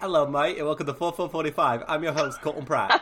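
bad put-on Australian accent. Host opens the show's intro to the listeners in a bad australian accent. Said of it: "Should I try an intro with an Australian accent".

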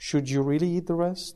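very gentle, soft, mild, unimposing tone. Acting out a guardian angel questioning someone eating chocolate: very gentle questioning voice. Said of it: "very gently".

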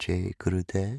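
very soft, gentle, soft-spoken voice. Recalling the salutation heard around lunchtime among meditators: very soft voice. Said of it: "I'm saying it in a very soft voice".

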